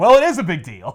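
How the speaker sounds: acted, loud, furious angry yell. Retelling an argument between two people, speaker voices the man, retelling an angry yell. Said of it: "yelling at me".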